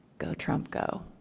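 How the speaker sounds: secret, hushed whisper under the breath. Speaker retells what his client said to him, muttered under his breath. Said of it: "he goes under his breath".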